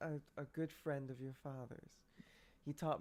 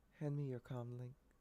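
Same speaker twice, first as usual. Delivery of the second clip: soft, very calm half-whisper; 3 semitones lower, 5 dB quieter than usual. Playing a character asking a woman for her comm link: calm half-whisper. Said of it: "I whisper very calmly".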